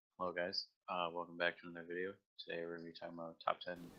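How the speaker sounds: low, flat, level deadpan drone. Imitating a YouTuber's video intro, Mad Season deadpan impression. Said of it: "like really fucking deadpan".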